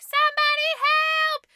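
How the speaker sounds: very high-pitched screaming cry. Retelling a story where a character calls for help: imitating a scream. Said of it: "she screams, she's like".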